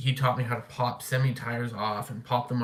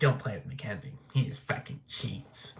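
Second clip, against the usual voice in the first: put-on scolding, yelling. Recalling childhood, the speaker imitates a woman scolding kids about him. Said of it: "she'd be like".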